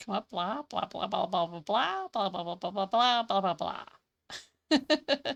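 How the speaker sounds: droning, monotonous teacher voice. A teacher recounts calling a row of students up, Charlie Brown teacher voice. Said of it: "I sounded like the teacher from Charlie Brown".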